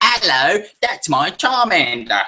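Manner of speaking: put-on very slow, high, swooping, over-the-top British accent. Recounting an episode about Charmander, the speaker voices the trainer with a crazy British accent. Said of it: "He's got a crazy British accent".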